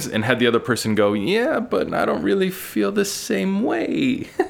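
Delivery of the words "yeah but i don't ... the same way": slow, high-pitched grandma voice. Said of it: "I turned that into a grandma voice".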